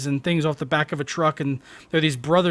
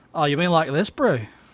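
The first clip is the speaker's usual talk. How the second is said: imitated South African accent. Asked whether they can do one, answering in a South African accent. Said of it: "the South African accent?".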